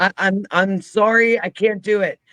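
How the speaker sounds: tearful, high-pitched, stumbling over words. Retelling running off across the road after something growled: retelling a tearful outburst. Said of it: "tears down".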